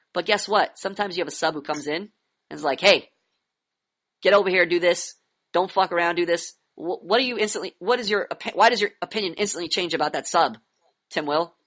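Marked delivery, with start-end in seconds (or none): 2.8-6.6 put-on authoritative, commanding voice. Imitating a strict substitute teacher giving orders: imitating an authoritative tone. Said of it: "They have an authoritative tone".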